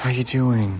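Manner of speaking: pitying, sympathetic, sorry-for-you tone. A character showing a friend how others talk to them, in a pity voice. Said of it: "You never do the pity voice with me".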